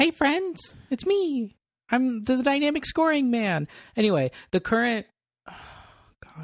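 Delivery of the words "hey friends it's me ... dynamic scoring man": shrill, ear-grating voice. After complaining that the impression hurts the ears, join in with an ear-hurting Paul Ryan impression. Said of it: "Paul Ryan sounds like one of those characters".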